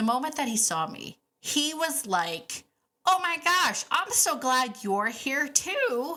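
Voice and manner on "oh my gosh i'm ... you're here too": high, worked-up, overjoyed, gushing put-on excitement. Retelling how the horse greeted the speaker on the icy hill: imitating Nigel excited. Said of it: "he got all excited".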